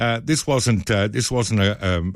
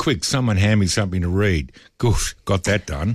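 plain

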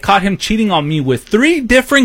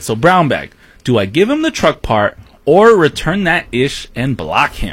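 ordinary talk

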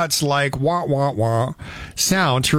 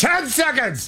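sudden, very high, full-voice delivery; 10 semitones higher than usual. Retelling a timing cue he heard in his ear, in full voice. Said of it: "full voice".

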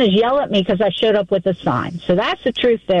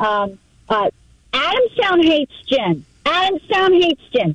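put-on yell, much higher, slower; 5 semitones higher than usual. Recounting a man yelling at you in the rain, retelling his yelling. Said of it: "He starts yelling".

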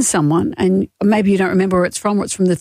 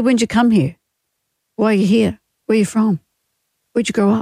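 plain

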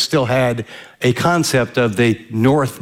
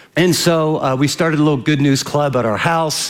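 ordinary delivery

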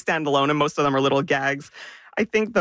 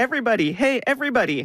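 put-on high, little-kid toddler baby talk; 8 semitones higher than usual. Describing a comic panel, voicing the little girl's line, toddler voice. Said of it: "she's talking like a toddler".

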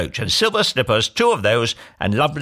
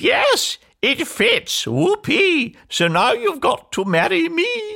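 shrill, very high, drawn-out shrieking scream. After trying it on, the ugly sister answers the protesting prince, screaming. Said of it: "But she screamed".

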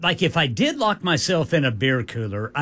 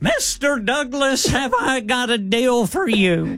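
put-on very high-pitched Southern accent; 9 semitones higher than usual. Speaker mocks a man who sounded like Mr. Haney, in Mr. Haney southern accent. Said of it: "that just that wicked southern accent".

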